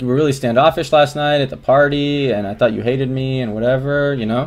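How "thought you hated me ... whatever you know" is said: ordinary talk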